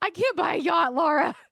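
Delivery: half-joking high scream. Joking about being sixty and broke: pretend screaming. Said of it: "I'm just gonna scream".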